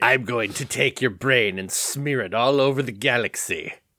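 mock evil villain gloating. Showing how a villain should talk, delivering a mock evil villain boast. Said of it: "talk about how evil you are".

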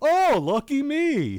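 smug, gloating tone, pitched high and loud. Discussing a voice actor's performance, imitating how he plays a winning hand: mock-smug Bruce impression. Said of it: "sort of smug, smart-ass Bruce".

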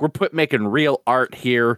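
ordinary talk

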